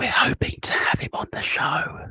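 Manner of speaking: hushed, secretive whispered aside. Telling listeners about a hoped-for special guest as a secret, whispering. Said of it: "I'm going to whisper it".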